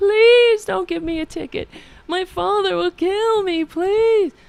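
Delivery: very high, loud, sobbing, tearful voice. Retelling begging not to get a ticket after being pulled over: retelling a crying plea. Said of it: "I had my head out the window go- crying".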